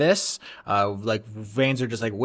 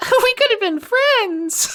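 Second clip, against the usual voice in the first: very high-pitched, loud creature voice; 7 dB louder than usual. Voicing a snake-headed tail biting a player: laser tail voice. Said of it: "you can hear the laser tail voice just being like".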